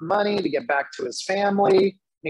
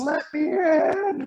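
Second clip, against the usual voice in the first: heartfelt, overcome, high, emotional crying out; 10 semitones higher than usual. Retelling a worship leader quoting scripture: imitating emotional crying out. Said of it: "he gets all, like, emotional".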